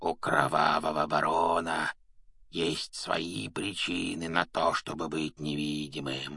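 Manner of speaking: hoarse whisper. A narrator reads an unseen character's line to another character, hoarse whisper. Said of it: "произнес он хриплым шепотом".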